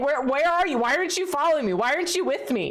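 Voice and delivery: high, distressed, upset calling out. Retelling talking to the dog when she stays downstairs: retelling being upset. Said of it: "so upset that she's not with me".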